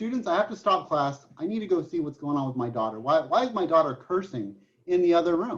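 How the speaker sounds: ordinary talk, nothing marked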